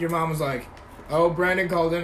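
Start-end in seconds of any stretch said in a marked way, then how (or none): none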